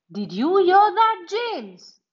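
eager, thrilled, high rising pitch. A boy hears a friend's echoing cries for help: excited. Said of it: "Mark said excitedly".

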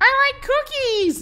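put-on party girl voice, very high pitch. Reading out a viewer's request, saying the line: party girl voice. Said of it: "say in a party girl voice".

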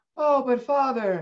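put-on high, young little girl's voice. Acting out a father and his young daughter talking: young little girl voice. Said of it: "young little girl".

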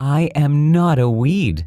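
very slow, sugary-sweet voice. A flower answers the little prince's objection; replied sweetly. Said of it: "the flower replied sweetly".

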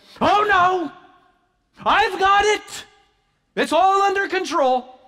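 stern frustration. Imagining Martha's reply when offered help in the kitchen, imitating Martha, stern and frustrated. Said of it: "in a stern, frustrated voice".

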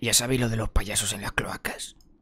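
soft, low, conspiratorial whisper.

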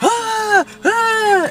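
very high-pitched screaming. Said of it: "she starts screaming".

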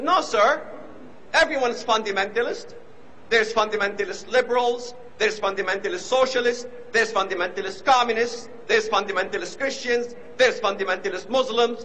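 plain

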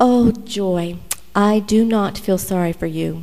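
put-on sweet British accent. Quoting Margaret's reply when you told her your woes, Margaret's sweet British accent. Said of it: "in her sweet British accent".

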